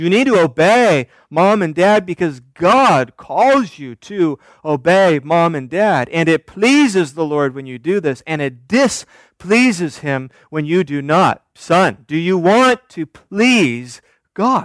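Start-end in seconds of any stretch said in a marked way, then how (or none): 11.5-14.7 solemn, grave, weighty serious tone. Teaching about parenting, the speaker models asking a son, in a very serious tone. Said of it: "There's a real serious tone".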